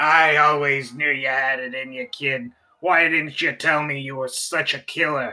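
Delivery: rasping, gravelly voice pushed downward. Game narrator voicing Captain Chaucer at the slave pit's edge, Captain Chaucer's raspy voice. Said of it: "[name] comes to the edge of the slave pit, ... his his reptilian eyes kind of like roll all around in like a weird spiral shape. / and he goes, / Your slave master comes by and he rasps at you".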